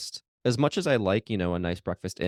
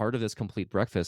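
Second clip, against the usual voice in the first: normal talking voice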